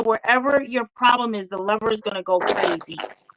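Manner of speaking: ordinary talk, nothing marked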